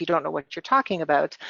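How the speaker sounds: plain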